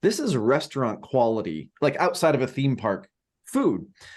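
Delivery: normal talking voice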